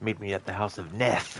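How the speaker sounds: angry delivery. Demonstrating how a name sounds, said angrily. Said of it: "when you say it angrily".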